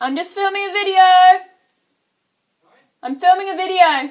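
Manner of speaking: very loud, very high-pitched shout. Calling out to her husband who is talking to her while filming: calling out loudly. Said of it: "Sorry if that was really loud".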